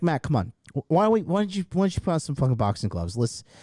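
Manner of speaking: normal talking voice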